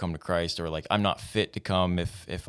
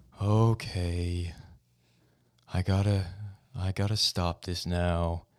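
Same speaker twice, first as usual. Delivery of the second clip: glum donkey-like voice. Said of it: "fantastic Eeyore impression".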